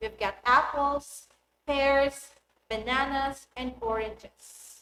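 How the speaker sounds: list intonation, rising on each item, falling on "oranges". Intonation example of a finished list, rise on each item, fall on oranges. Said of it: "the intonation rises on each item on the list and falls on the last item".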